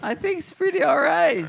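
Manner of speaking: very high, squeaky adolescent voice crack. Talking with Richard as both their voices crack, voice breaking. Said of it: "Why is your voice breaking".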